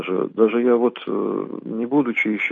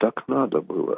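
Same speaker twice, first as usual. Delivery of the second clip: imitated muffled voice, quieter and slower; 4 dB quieter than usual. Speaker quotes what people used to say, imitating a muffled, quiet voice. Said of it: "как-то глухим таким голосом, так тихо".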